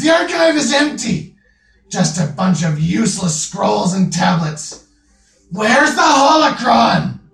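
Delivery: crying out. Voicing a figure heard shouting from a chamber: crying out. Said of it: "the voice cries".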